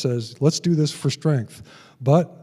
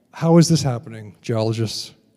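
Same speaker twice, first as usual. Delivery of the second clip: normal talking voice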